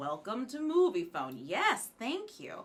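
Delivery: automated, recorded phone-line announcer voice. Remembering calling in for movie tickets, speaker does the Moviefone voice. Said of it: "I always think of the movie phone voice".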